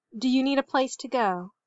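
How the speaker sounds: ordinary delivery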